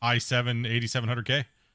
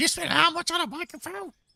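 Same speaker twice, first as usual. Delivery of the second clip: put-on, very high, disbelieving, furious shout. Recounting how she started yelling at him, retelling her yelling. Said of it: "she just started yelling at me".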